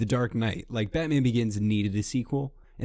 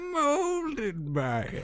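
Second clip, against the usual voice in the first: put-on higher-pitched old villain grandma voice; 3 dB quieter than usual. Trading impressions of a villain's line, doing a grandma Bane voice. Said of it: "Sound like a grandma Bane".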